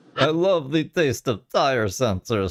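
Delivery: slow, drawn-out vampire voice. Mocking another speaker's complaint about tire sensors: Count Dracula voice. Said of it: "That's my Count Dracula impression".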